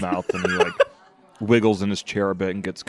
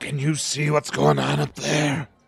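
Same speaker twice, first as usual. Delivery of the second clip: high, loud stage whisper; 7 semitones higher than usual. Retelling a guy with two full plates asking a question, retelling a loud whisper. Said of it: "but he's doing like the loud whisper".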